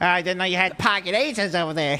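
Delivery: mocking trash-talk tone. Mocking the banter of poker players at the table: imitating poker table banter. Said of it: "the banter at the table".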